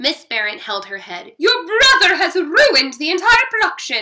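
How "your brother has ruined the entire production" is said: very loud, shrill, piercing screech. At intermission, Miss Barrett turns on the narrator, shrieking. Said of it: "she shrieked".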